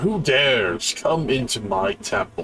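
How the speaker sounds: grand, lordly temple-guardian voice. Narrator voicing a voice from behind a closed temple door, booming voice. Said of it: "you just get a booming voice in there".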